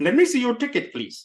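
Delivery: goofy fake Indian accent. Demonstrating a stereotyped accent on a ticket request, goofy fake Indian accent. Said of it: "enough of my goofy Indian accent".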